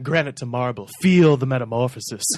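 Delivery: mock documentary narrator voiceover style. Recalling a school documentary, one speaker imagines its narration in documentary voiceover voice. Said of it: "imagining a voiceover just going".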